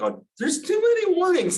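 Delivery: put-on voice, very high-pitched. A lecturer imitates industry programmers who turn off warnings, imitating in high-pitched voice. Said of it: "they say it in that high pitched voice".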